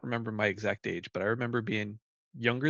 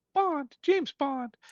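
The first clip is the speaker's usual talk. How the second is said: put-on very high voice of a prepubescent little boy. Recalling going around as a little kid saying a catchphrase, prepubescent boy's voice. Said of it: "prepubescent uh voice going".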